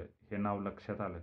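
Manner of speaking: plain reading voice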